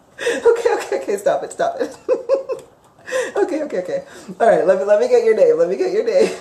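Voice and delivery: giggling while speaking. Trying to get a woman's name while she keeps making them giggle, giggling while speaking. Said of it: "Sorry, she still keeps making me giggle".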